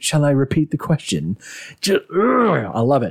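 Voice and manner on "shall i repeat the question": play-acted, calmest possible, utterly calm delivery. Retelling a scene where Rory faces down enemies: calmly quoting Rory. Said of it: "he just calmly says".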